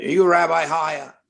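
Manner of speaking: tough, hard-nosed, loud forceful voice. Retelling a phone call from a lawyer: imitating Mickey Rudin's tough voice. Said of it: "he talks to me in a tough voice".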